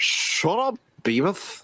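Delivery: high-pitched put-on cartoon teenager voice. Among friends, right after saying he can't do it, trying a Butt-Head impression. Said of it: "That's pretty good".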